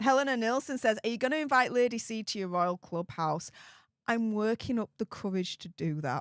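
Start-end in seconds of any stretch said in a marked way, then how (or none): none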